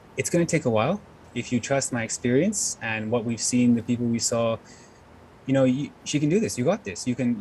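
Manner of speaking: normal talking voice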